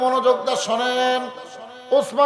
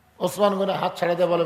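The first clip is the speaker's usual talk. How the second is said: ordinary delivery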